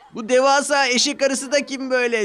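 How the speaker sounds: shouting. Narrator reads laughing children calling out as another engine arrives, shouting. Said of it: "diye bağırdılar".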